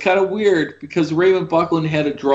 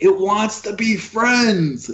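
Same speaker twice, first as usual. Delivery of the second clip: put-on screaming, pitched high and dragged out; 5 semitones higher than usual. Retelling what someone screamed at them: imitating someone screaming. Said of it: "I remember him screaming at me".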